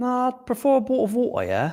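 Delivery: very high, sing-song, swooping British accent. Playing along after being asked about a british accent, in a british accent. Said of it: "you have British accent, yeah? Oh, fuck yeah, I do".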